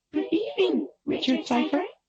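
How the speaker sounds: very high, tiny little voice. Reading a story aloud, a hovering wisp greets Richard Cypher: tiny little voice. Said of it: "it said in a tiny little voice".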